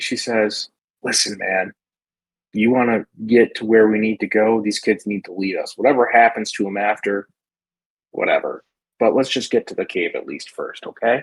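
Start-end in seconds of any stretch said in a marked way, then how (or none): 1.0-11.2 hushed whispering voice. Voicing a character who quietly urges a companion to follow the kids: whispering. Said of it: "she just kinda whispers".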